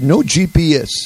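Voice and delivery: put-on French accent. Retelling a man's answer to his question, imitating a French accent. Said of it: "he spoke back to me with a French accent".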